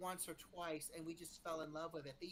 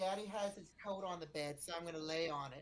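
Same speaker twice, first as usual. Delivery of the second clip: raised voice, speaking as a cat; 5 dB louder than usual. Saying what the cat on the coat is thinking: voicing the cat. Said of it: "and I guess now she's like".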